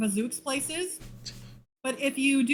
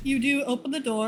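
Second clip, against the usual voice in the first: ordinary talk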